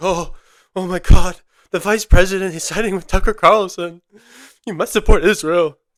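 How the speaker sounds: loud, pushed voice that cracks. Mocking a woman on television, Batia impression, voice cracking. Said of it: "You could hear her voice like practically cracking".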